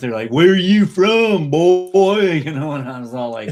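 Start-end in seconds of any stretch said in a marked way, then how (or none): 0.3-2.4 loud, slow, drawn-out jeering, mocking tone. Recalling how people teased him about his heavy Texas drawl, imitating mocking teasers. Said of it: "people were making fun of me".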